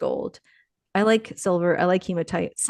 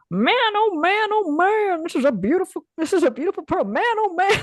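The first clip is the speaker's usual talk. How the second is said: put-on Chinese accent, very high pitched; 11 semitones higher than usual. Act out the guy whenever he comes across a big pearl, imitating a Chinese Western accent. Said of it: "Does he have a Chinese accent too?".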